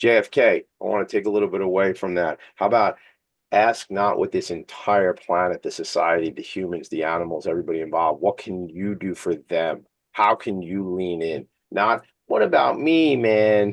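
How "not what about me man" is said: silly, slow, goofy put-on comic voice. During a rant, slipping into his funny voice. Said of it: "That's my funny voice".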